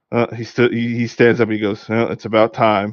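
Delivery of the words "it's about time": mock-nonchalant, offhand, slower. Retelling a young character's reply to a question, retelling a nonchalant reply. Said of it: "like kind of like nonchalantly".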